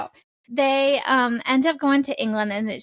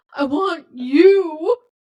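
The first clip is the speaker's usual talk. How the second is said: loud, with the word you drawn out; 5 semitones higher, 6 dB louder than usual. Retelling a book scene: good Tristan voice. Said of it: "That was a good Tristan voice".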